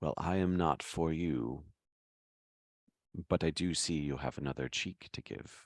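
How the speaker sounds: whispered in a put-on character voice. Whispering into a character's ear while playing a role: whispering in character. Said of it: "I lean down and whisper into his ear".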